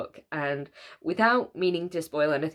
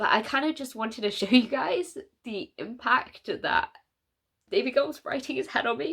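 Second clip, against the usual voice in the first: crying, tearful, breaking voice, pitched up; 7 semitones higher than usual. A channel host tells viewers about an author's impact on them, crying, voice breaking. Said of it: "Honestly, I'm crying again".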